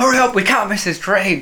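high-pitched, urgent shout. Retelling hurrying Ellie to catch a train, retelling own shout. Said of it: "I was shouting at Ellie".

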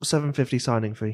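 muttered low aside, under the breath. Game master voicing a character answering the players, kind of under his breath. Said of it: "kind of under his breath".

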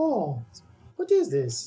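horrible high cartoon plumber voice, big drawn-out sing-song swoops. Describing Mario looking up at skyscrapers in a new game, horrible Mario impression. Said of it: "that's a horrible impression".

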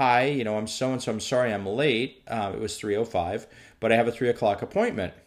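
usual speaking voice

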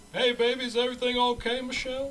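very high, sweet, sweet-talking voice. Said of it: "he calling Michelle just to check in".

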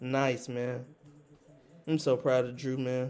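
deadpan, flat, sarcastic fake admiration. Looking at numbers with another speaker who disagrees: sarcastic fake praise. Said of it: "you are being sarcastic as hell".

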